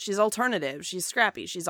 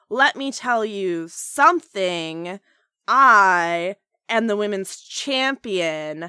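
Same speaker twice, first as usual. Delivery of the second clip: loud, stiff robotic voice, "I" stretched out; 6 dB louder than usual. Criticizing how Charlotte sounds in promos, mimicking her lines: stiff robotic Charlotte impression. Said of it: "That's not human speech".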